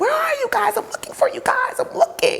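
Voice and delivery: mock very high, shrill screamed cry. Retelling how a little brother came up the stairs: imitating someone screaming.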